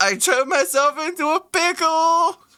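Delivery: shrill, very high, belted-out delivery. Acting out a cellmate pretending to be Pickle Rick: imitating Pickle Rick. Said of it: "he pretends to be Pickle Rick".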